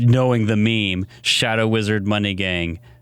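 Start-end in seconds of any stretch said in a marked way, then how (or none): none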